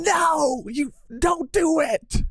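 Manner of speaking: mock shrill, very high-pitched almost-scream. Describing a scene, doing Yoru almost screaming. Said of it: "almost as if like she's screaming like".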